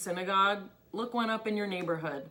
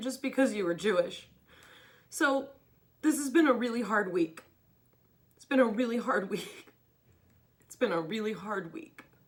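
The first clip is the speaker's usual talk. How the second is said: weeping, tearful voice while speaking; 2 semitones higher than usual. Speaking to an audience about a really hard week, crying.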